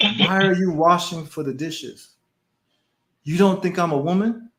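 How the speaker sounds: put-on broken English. Quoting how a woman talked to the speaker, imitating her broken english. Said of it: "This is how she talked".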